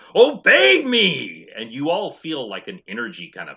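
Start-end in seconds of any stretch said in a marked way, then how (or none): 0.2-1.5 shrill, high, full-volume barked commanding yell. Voicing a woman with a whip commanding everyone: yelling a command. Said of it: "she grips it tightly, and she yells out".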